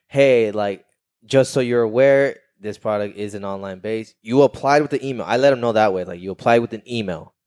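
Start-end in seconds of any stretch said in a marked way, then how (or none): none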